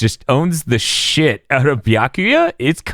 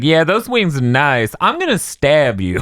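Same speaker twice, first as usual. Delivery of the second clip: ladies' man style delivery; 4 semitones higher than usual. Retelling an anime fight, quoting Ichigo: Ichigo as a ladies' man. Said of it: "It sounded like the ladies' man the entire time".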